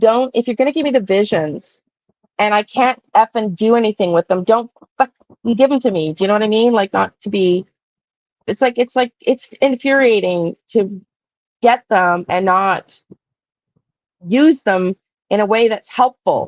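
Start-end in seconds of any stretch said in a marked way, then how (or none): 0.0-6.1 mock fed-up ranting yell, kept contained. Speaker re-enacts what they yelled at their guides, retelling a yell. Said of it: "I was like yelling at my guides".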